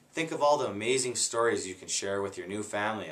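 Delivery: plain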